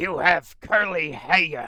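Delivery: put-on deep-voiced old New England accent. Retelling an old woman grabbing the speaker's hair, in an old New England accent. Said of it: "she had the old the old New England accent".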